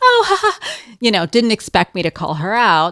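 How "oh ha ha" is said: very high, awkward, jittery little laugh. Retelling a neighbor's reaction after being called out: imitating a nervous laugh. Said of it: "she kind of does this nervous".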